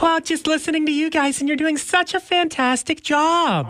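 put-on woman's voice, very high and feminine. Playing a caller phoning the Country 104 radio show, in a feminine lady voice. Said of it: "me doing a lady voice, a feminine sounding voice".

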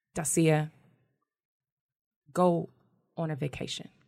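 very calm, slow, very deliberate, softened tone. Retelling what he said to her, quoting him very calmly and slowly. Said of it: "He said it very calmly and very slowly".

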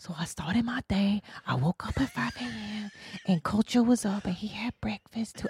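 soft, hushed whisper. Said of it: "she whispered".

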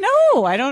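high-pitched, crackly voice.

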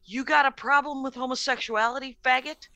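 plain

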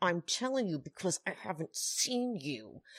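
quiet words forced out through clenched teeth. Acting out a woman's quoted words, retold through gritted teeth. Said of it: "Danielle is like gritted teeth".

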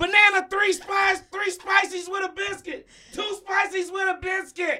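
very high voice with no bass. Imitating a quarterback ordering food: imitating Patrick Mahomes' voice. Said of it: "Have you listened to him?".

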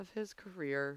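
under-the-breath mutter. Retelling what you said to yourself with your mic still on, under your breath. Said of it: "I said under my breath".

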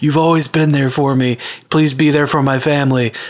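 dying man voice, as if on deathbed. Imagining a story, the speaker voices a man on his deathbed. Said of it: "on his deathbed".

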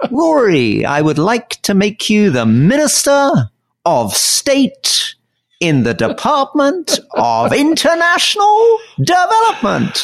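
very high, slow, swooping sing-song delivery. Retelling being made a minister, Theresa May voice. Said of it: "Theresa May when she made me a minister, did that sort of voice".

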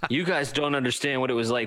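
ordinary talk

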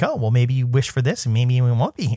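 ordinary talk, nothing marked

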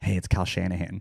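put-on child-voice whisper. Retelling how a child ran up to someone, whispering in an eleven-year-old's voice. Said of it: "whispers in an 11-year-old voice".

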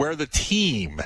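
team stretched slow with a wide pitch swoop.

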